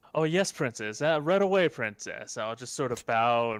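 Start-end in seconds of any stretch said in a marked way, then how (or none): 0.1-2.3 high, loud, sarcastic, taunting, mocking voice. A player's character bows and backs out from the princess, in a mocking voice. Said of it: "as I'm sort of doing that mocking voice again".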